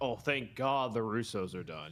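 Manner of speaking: ordinary talk, nothing marked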